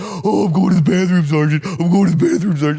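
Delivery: loud, high teasing voice. Retelling a roommate echoing the speaker's words to mock: imitating Rob mocking. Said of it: "he is just giving it to me like I'm doing a bit".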